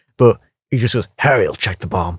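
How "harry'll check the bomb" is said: low, totally straight, dead-serious delivery. Retelling a film joke that fell flat: imitating Keanu Reeves completely serious. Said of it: "completely seriously".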